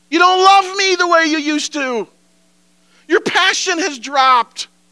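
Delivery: high, loud, hurt, complaining tone.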